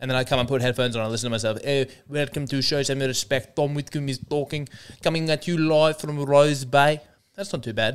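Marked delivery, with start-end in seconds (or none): 1.6-7.0 practised, put-on South African accent. Playing back a show intro practiced while walking the dog: South African accent. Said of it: "working on this South African accent".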